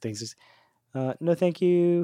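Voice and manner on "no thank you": put-on high Australian accent, podcast-host style. Imitating a podcaster politely refusing someone at a hotel door: imitating an australian accent. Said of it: "great Australian gaming podcast".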